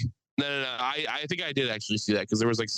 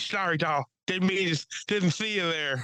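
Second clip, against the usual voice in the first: high cartoon voice, words slurring into each other; 6 semitones higher than usual. Quoting a South Park character who runs people over, slurred voice. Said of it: "with like a like slurred voice".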